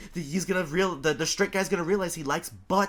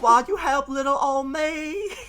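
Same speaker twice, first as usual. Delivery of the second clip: high, loud, helpless damsel-in-distress pleading cry; 9 semitones higher, 5 dB louder than usual. Retelling a cartoon scene with another speaker: SpongeBob as damsel in distress. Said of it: "he's pretending to be a damsel in distress".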